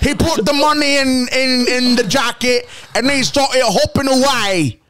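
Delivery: put-on Australian accent. Showing off his own australian accent in a short story, put-on australian accent. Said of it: "That's my Australian".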